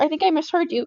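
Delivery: ordinary delivery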